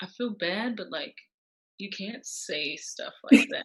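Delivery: sheepish, voiced near-whisper. Retelling telling someone their remark was wrong: retelling own near whisper. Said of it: "almost whispering it".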